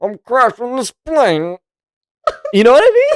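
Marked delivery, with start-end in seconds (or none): 0.0-1.6 very high villain voice, as if behind a mask. Imitating the movie villain's line, sounding like a Bill Cosby type of thing. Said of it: "a Bill Cosby type of thing".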